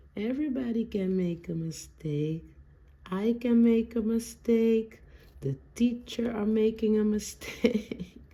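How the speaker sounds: put-on high, sweet, cute little-girl voice. Retelling what a little daughter said: imitating a daughter's cute voice. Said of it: "with her cute voice".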